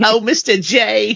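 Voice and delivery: put-on cartoon voice, high, eerie, unsettling, comic-book style. Recalling a line from one of their videos; Harley Quinn voice. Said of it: "that Harley Quinn voice is still terrifying".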